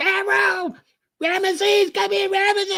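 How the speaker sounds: scared woman screaming, very high pitched. Speaker acting out his woman screaming for him over a bug, imitating a woman screaming. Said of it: "you hear your woman screaming".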